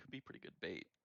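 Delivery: very quiet, whispered, hushed mutter under the breath. Player retelling a remark their character muttered to a fellow player, under breath. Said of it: "turn to I b- beneath my breath".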